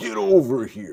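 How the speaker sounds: slow yell with a wide pitch range.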